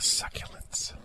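succulents in a very soft, hushed whisper. Asked to speak succulently, joking about a disliked word: whispered 'succulents'. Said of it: "It sounds worse when you whisper it even".

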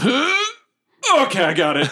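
huge, booming, very high and swooping voice. Describing a spell's effect in a game: big booming voice. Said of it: "a big voice go".

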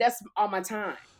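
ordinary delivery

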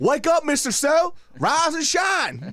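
high, loud, slow, booming voice. Retelling how a coach woke a sleeping student: imitating Coach Esslinger. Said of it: "He'd be like".

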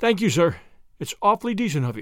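ordinary talk

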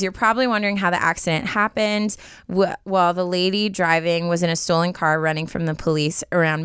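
ordinary talk

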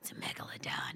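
soft, hushed, awestruck whisper.

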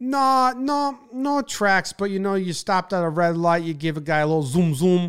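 put-on New Jersey accent. Quoting a guy's reply to the speaker's question about racing, in a thick jersey accent. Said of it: "thick Jersey accent. Classic dumb guy".

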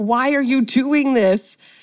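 play-acted scream, slow, mild, restrained and stretched out. Recapping a scene where one character catches another, retelling Jules screaming. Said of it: "Jules is screaming like".

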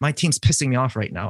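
normal talking voice

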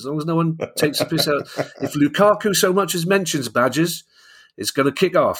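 terrible rural English accent. You are voicing an imagined angry mate who has bought Chelsea, in a terrible put-on accent. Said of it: "I know it's a terrible accent".

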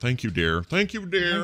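put-on elderly guy's fond tone. Repeating own thanks to spouse for tea, mock old guy voice. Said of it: "sounded like the oldest guy thing to say".

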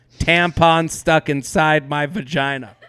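ordinary talk

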